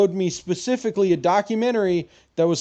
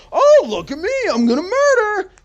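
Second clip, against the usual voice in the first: squeaky, very high, goofy, silly put-on voice; 12 semitones higher, 5 dB louder than usual. Mocking someone who hides in a corner, in a goofy put-on voice. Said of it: "I said it in a goofy voice so it wouldn't be as bad".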